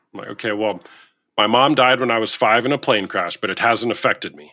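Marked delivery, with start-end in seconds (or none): none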